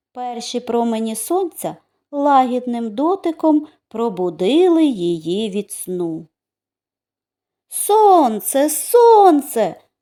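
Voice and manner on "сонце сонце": high, joyful shouting cry. A raindrop wakes to the first rays of the sun, shouting. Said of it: "Закричала краплинка".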